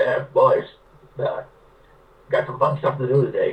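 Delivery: put-on slow, gravelly, heavily accented old man drawl. Retelling how an old man greeted him and his brother, gravelly with heavy accent. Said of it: "this old man's got this gravelly voice with a heavy accent".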